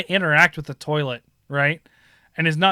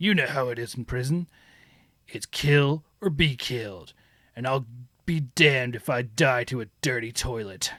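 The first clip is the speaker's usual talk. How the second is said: put-on gruff soldier voice; 4 semitones lower, 5 dB quieter than usual. Retelling a game character's prison line in a gruff voice, like Solid Snake. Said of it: "He's got that, like, gruff, like, "Er" voice".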